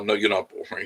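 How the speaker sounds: ordinary delivery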